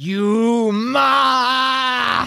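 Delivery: high snarling voice, ma drawn out. Voicing a woman who snarls at the party as they enter: snarling. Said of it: "the woman behind him snarls at you".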